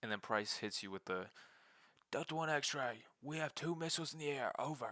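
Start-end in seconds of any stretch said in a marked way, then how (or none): 2.1-4.9 put-on panicked soldier voice, high-pitched, rattled off. Retelling a game mission's radio call, imitating Price freaking out. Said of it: "he starts freaking out".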